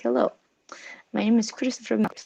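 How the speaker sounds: put-on thick Greek accent. Retelling what a man said when the speaker approached him, very thick Greek accent. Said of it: "very thick Greek accent".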